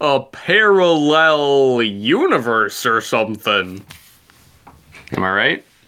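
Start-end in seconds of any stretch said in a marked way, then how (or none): 0.0-3.8 odd, weird put-on voice, slowed and drawn out. Adding a remark to a talk about alternate universes: weird voice. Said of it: "That was a weird voice".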